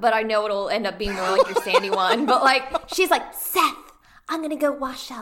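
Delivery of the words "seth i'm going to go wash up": airy, breathy, high little voice. Asked what a wash up is, imitating her: breathy high-voiced impression. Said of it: "I wish I could do like an impression".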